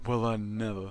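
deep, low, rumbling lumberjack voice. Voicing a lumberjack in the next town, deep lumberjack voice. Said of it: "Deep voice lumberjack".

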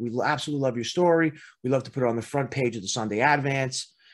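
normal talking voice

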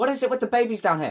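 very high, very loud, shrill, rushed, jittery nervous yell. Playing a game on stream while placing torches, nervous shouting. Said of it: "Sorry for shouting".

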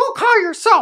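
very high, very loud, shrill raven cry. Speaker voices what the raven says when called, in a raven voice. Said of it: "that's your raven voice".

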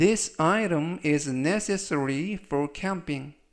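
very slow, careful English reading. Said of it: "천천히 세 번씩 읽어드리고요".

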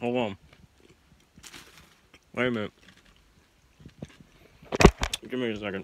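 speaking through a mouthful, chewing. Eating a sandwich on camera, asking viewers to wait, talking with mouth full. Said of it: "That was a lot in my mouth".

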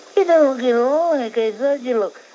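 high, loud starstruck fan voice.

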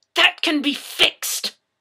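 loud, high, hissed delivery. The narrator answers someone who bragged about feeling no pain, hissed. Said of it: "I hissed at them".

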